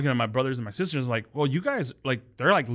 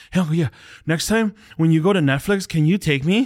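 put-on rushed, excited kid voice, higher and louder; 4 semitones higher, 6 dB louder than usual. Retelling how a young nephew asks a favor: imitating a kid talking fast and excited. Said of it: "gets real excited, so he talks real fast".

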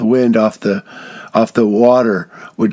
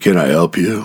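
put-on stern voice, lower; 5 semitones lower than usual. Retelling how a lady greeted the speaker's group, imitating a stern voice. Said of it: "says with a stern voice".

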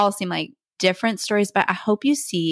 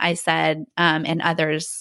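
plain

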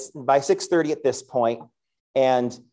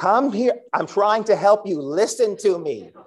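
mock, high screamed call; 7 semitones higher than usual. High school principal retells chasing a bird through the halls, acting out own screaming. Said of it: "And I'm screaming at a bird".

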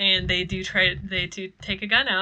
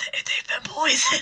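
very loud, pushed stage whisper; 6 semitones higher than usual. Retelling how a man warned a woman about the pop: retelling a very loud whisper. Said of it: "whispers very loudly".

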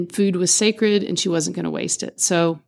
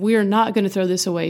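mock firm, no-nonsense, stern scolding voice. Retelling how a coworker scolded about wasting dough: imitating a stern scolding. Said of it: "very sternly said".

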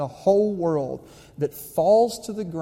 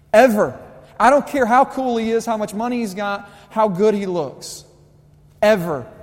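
fired-up, loud, high-pitched yelling; 5 semitones higher, 6 dB louder than usual. Addressing the ladies, getting fired up: yelling. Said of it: "I just start yelling".

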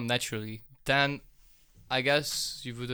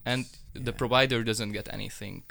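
ordinary talk

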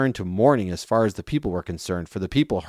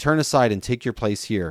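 ordinary delivery

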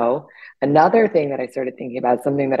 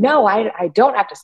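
put-on indignant voice, pitched up; 8 semitones higher than usual. Retelling a woman's reply when told to stop yelling, mock-indignant. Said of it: "she gets really indignant".

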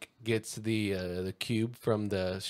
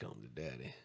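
very quiet, lazy, half-mumbled drawl; 10 semitones lower, 16 dB quieter than usual. Imitating a line as Matthew McConaughey would say it: Matthew McConaughey voice, halfway mumbling. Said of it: "He's like".

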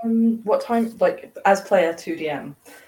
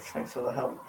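very quiet, very low, under-the-breath mutter; 7 semitones lower, 12 dB quieter than usual. Voicing a character at a gem shop counter: muttering. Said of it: "Farrah kind of mutters".

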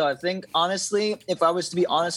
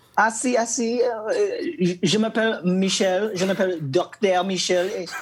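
joking, put-on French accent. A guest joining the show is welcomed by the hosts, answering in put-on french. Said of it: "He comes in with the French immediately".

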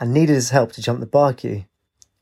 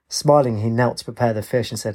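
ordinary delivery, nothing marked

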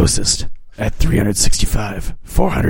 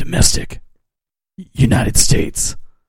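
deep, low put-on voice. Giving a box-office guess after being told to continue, in a put-on deep voice. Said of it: "deep throat".

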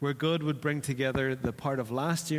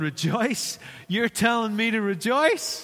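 high, loud voice cracking mid-phrase; 8 semitones higher, 6 dB louder than usual. Speaker acting out a listener who is told to rejoice: mock voice cracking. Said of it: "the way my voice just broke there".

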